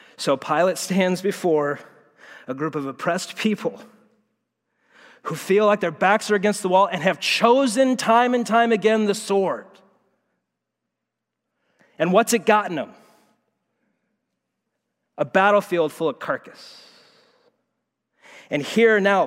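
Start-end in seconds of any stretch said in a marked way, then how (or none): 0.2-16.8 high, choked-up voice catching, close to tears. Explaining a passage about pilate to listeners, voice choking up. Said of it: "I'm gonna cry".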